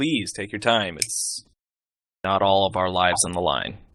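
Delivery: mocking, sarcastic voice. Speaking in character to an assistant while leaving: sarcastic. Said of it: "I sarcastically say".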